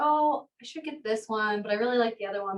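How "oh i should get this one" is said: usual speaking voice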